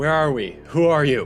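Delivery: shouting. Yelling questions at an unseen voice that won't answer: yelling. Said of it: "I just yell".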